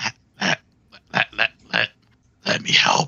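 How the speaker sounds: choppy, stammered, broken start-stop stuttering repeat. Quoting what he says to you, broken, stuttering voice. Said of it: "it's kind of broken in between".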